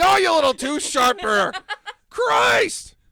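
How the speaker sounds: enraged, very high, very loud, drawn-out shrieking. Voicing the captain yelling at the little goblin: angry screaming. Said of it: "frequently screaming at the little goblin".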